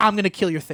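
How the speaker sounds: usual speaking voice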